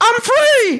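joyful, exultant, very high, loud shout.

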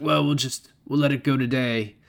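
throaty put-on voice. Retelling a movie scene where Bob waives a rule: throaty Bob impression. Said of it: "That's a really good Bob impression".

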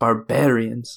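quiet muttering under the breath. Muttering a remark under the breath while in character: muttered under breath. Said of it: "under my breath".

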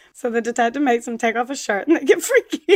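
cracking up, talking through heavy laughter. Trying to retell a plot point normally, the speaker keeps laughing hard while talking. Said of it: "how hard you're laughing".

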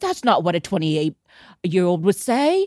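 clumsy, very bad British accent. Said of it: "that was just my very bad British accent".

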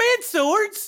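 squeaky puzzled voice.

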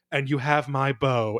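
ordinary talk, nothing marked

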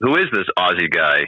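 ordinary talk

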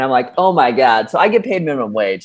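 ordinary talk

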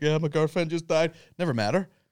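put-on sobbing voice. Retelling a guy interviewed after a match, imitating someone crying. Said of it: "crying like".

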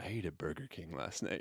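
soft, muttered aside under the breath. Retelling a producer's remark during a long meal: imitating Donnie muttering under breath. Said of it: "saying under his breath".

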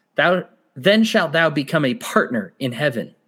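ordinary talk

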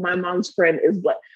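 normal talking voice

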